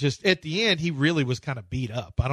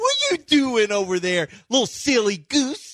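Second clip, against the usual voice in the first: put-on very high, cooing, swooping baby talk; 9 semitones higher than usual. Mocking how he talks to interns, imitating talk to a granddaughter. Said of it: "the same way he talks to his granddaughter".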